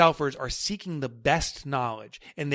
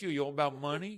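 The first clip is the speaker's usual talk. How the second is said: poor fake New York accent, quieter; 8 dB quieter than usual. Speaker imitates someone questioning him, bad New York accent. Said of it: "that New York accent comes in".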